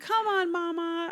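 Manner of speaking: put-on very high, tiny toddler voice. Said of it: "her little tiny two-year-old voice going".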